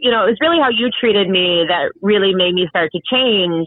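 ordinary talk, nothing marked

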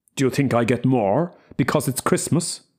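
truculent, belligerent, combative. Narrator reading a man's reply in a Christmas Eve quarrel, truculent. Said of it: "he asked truculently".

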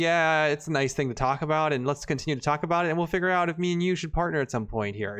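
ordinary talk

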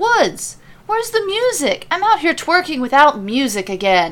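high, swooping voice calling out at a distance. Mid-dance, he calls back toward the kitchen to Woods, calling out. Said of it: "He calls back in the direction he came from".

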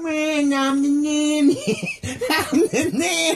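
put-on nasal New York accent. Doing a Fran Drescher impression while joking about her show: Fran Drescher impression. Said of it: "I can't even do it without laughing".

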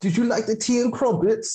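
high, fake, put-on British accent. Joking about last words before dying: put-on British accent. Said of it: "our British accents".

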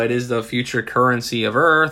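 normal talking voice

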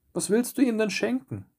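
high, taunting, scornful, mocking jeer. The group turns on the simpleton who keeps following them, mocking. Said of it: "spotteten sie".

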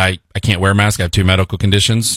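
normal talking voice

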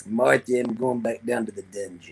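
low, dropped character voice. Answering a request for an impression while watching a match: Stu Hart impression. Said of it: "you got a good Stu Hart impression".

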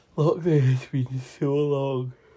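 said through a yawn. Co-host chatting on a recorded show: yawning. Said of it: "sorry, I yawned".

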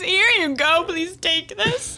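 put-on very high, tearful, sobbing voice. Acting out an imagined delivery guy handing over ranch: mock crying. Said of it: "and he's crying".

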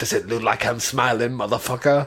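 talking in a dog voice. Retelling how a man voices his dog talking back, in a dog voice. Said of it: "He does the dog voice".

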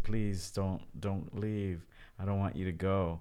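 acted sobbing, tearful crying voice. Retelling begging their dad not to leave at age six: retelling sobbing as a child. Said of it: "I was sobbing".

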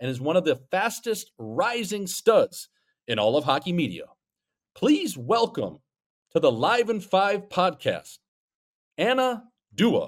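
big on-air radio announcer voice, pitched high. Podcast host introducing a guest on the show, radio announcer voice. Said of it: "I try to get that radio voice going".

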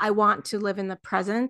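normal talking voice

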